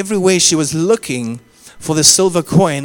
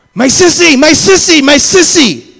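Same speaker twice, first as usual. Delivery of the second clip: put-on very loud, very high, frantic, desperate child's screaming cry; 11 semitones higher, 9 dB louder than usual. Parent retells their eldest child crying out at the pool: imitating Mikaela's desperate cry. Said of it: "we hear the desperation".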